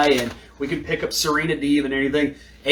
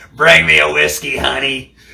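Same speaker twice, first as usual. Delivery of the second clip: put-on loud, creaky, rough old chain-smoker rasp; 6 dB louder than usual. Imitating an old woman chain smoking at a slot machine, ordering whiskey. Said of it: "the eighty-year-old woman at the slot machine who's just chain smoking cigarettes".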